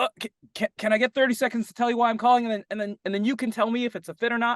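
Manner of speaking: hurried, very high-pitched, rushed, tripping over words. Demonstrating a caller answering a hard objection, speeding up. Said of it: "the moment you speed up".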